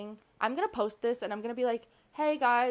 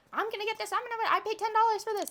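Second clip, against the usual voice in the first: put-on very high, wild, cracked yelling; 11 semitones higher than usual. Retelling how a cracked-out woman at work yelled at them: imitating a woman yelling. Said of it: "yelling at us".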